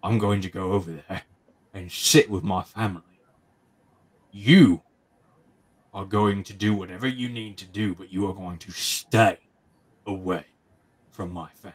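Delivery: low, menacing character voice. Roger stalks back up to the group and speaks, in Roger's low voice. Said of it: "he says in a low voice".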